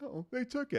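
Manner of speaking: mock very high voice, close to tears. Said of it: "he's kinda tearing up and he's like".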